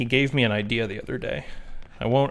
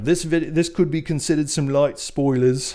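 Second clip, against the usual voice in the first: really bad fake Australian accent, slower; 4 semitones higher than usual. Quoting a video reviewer's warning, in a really bad australian accent. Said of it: "which is a really bad Australian accent".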